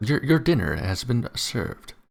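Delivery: synthetic machine assistant announcer voice. Showing what an AI machine voice would say: Siri voice. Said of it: "a Siri voice".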